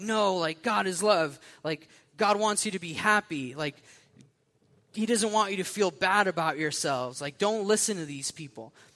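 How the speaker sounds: put-on, high, screaming rant. Retelling a man screaming back at a group holding signs, imitating someone screaming. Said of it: "he just starts screaming out".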